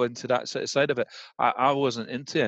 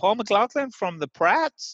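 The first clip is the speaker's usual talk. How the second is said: very high-pitched put-on American accent; 9 semitones higher, 3 dB louder than usual. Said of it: "it was American accent".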